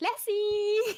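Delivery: high-pitched, loud calling out. Acting out a character calling for attention: calling for a stray puppy. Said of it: "calling for a stray puppy".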